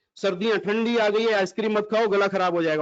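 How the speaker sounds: ordinary talk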